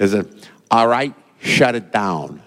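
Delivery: convincing put-on Chicago-style accent. Retelling the word that came into an airport restaurant, Chicago accent. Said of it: "That was a pretty good Chicago accent".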